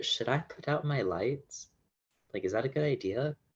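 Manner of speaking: high, hushed half-whisper. During the game, leaning over to Laurel's ear, half-whispering. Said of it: "whisper in Laurel's ear".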